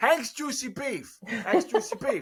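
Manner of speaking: very high-pitched put-on New York accent. Host doing an ad read in accents, new york accent. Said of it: "that's my like New York".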